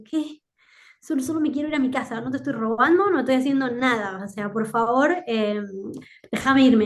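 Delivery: ordinary talk, nothing marked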